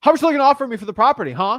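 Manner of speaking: fast, aggressive, loud. Describing calls asking owners about selling property, imitating a fast aggressive seller. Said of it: "they say it fast and really aggressively".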